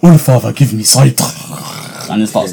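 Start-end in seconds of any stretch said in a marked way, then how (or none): 0.0-1.2 Soviet-style put-on Russian accent. Describing a game character who chases enemies down: imitating Bloodhound. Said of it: "talks like some Russian Soviet or so".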